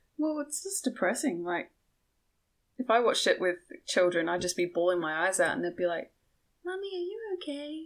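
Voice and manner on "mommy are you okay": put-on creepy child voice, very high, soft and hushed. Imagining children asking after her while she cries at a movie; creepy child voice. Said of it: "that was pretty creepy how I said that".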